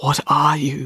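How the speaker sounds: frightened, hoarse, choked-out words. A haunted-looking young man answers a woman who asked if he's okay, choked out and hoarse. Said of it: "The man choked out in a hoarse voice".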